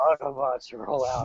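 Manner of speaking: put-on weary, worn-out, tired voice. Imitating Optimus Prime as he sounds now: tired Optimus Prime voice. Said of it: "He does sound tired".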